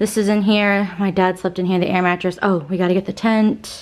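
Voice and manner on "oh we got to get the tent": ordinary talk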